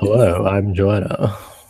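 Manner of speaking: soft, put-on radio presenter voice. Showing the other speaker how you differ from your real voice, introduce yourself in a put-on radio voice. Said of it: "That was a good impression of me".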